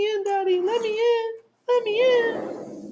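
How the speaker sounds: very high, very slow, pleading dog voice. Imitating the dog asking to be let back in: put-on dog voice. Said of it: "in that exact voice".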